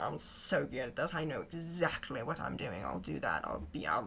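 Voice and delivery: low, smug, cocky, boastful voice.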